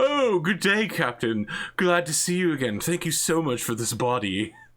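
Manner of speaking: put-on British accent. Describing an orc character who talks like a british guy: british accent. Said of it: "he talks like a British guy".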